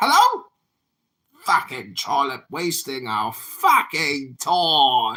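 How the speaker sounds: put-on British accent. Running a room where everyone must talk in a fake British accent. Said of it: "Welcome to the Fake British Accent Society".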